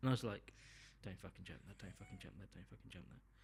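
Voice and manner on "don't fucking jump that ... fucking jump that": very quiet, fast, swooping, frantic repeated pleading. Retelling watching a husky near a fence: imitating own panicked pleading. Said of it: "Just panicking".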